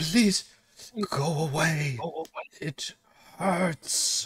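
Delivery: distorted, whimpering male voice. A game narrator voices an unseen speaker the players hear; distorted male voice. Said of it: "sounding like kind of a male voice, but kind of distorted".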